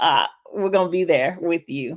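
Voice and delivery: ordinary talk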